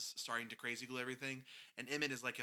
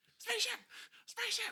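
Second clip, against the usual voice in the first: shrill, very high-pitched, repeated screaming; 5 dB louder than usual. Recapping a Lego movie scene with a friend, imitating Charlie Day screaming spaceship. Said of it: "Charlie Day screaming the word spaceship".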